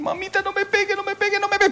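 put-on very high, whining, begging child's voice. Recalling being hit as a child, imitate a child's begging plea. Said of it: "ese era el tono que uno decía".

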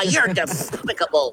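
lisping cartoon duck voice impression. Describing how cartoon characters sound, the speaker demonstrates a lisping Daffy Duck voice. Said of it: "sound like he talks with a lisp".

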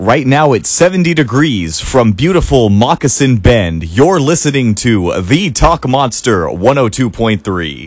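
radio announcer delivery. Reading the weather line aloud for critique, radio announcer voice. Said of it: "don't be an announcer".

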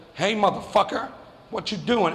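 ordinary talk, nothing marked

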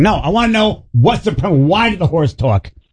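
yell with pitch pushed up high. Telling the others how he questions AI about a show, retelling a yell at AI. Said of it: "Are you yelling at AI right now?".

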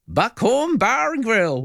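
put-on very high, slow cowboy-style American accent. Retelling voicing an ad for a bar: american accent. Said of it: "I had to talk like an American".

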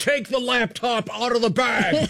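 high, slow mock scream at the top of the lungs.

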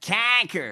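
mock nasal Midwestern accent. Mocking a rally-goer's accent from a clip: imitating a nasal Michigan accent. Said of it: "that accent, that guy".

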